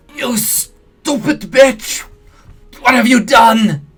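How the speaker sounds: very high, very loud, slow, strangled, drawn-out croaking shriek. Reading a bleeding man shrieking at a woman, strangled croaking shriek. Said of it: "the voice comes out in a strangled croak".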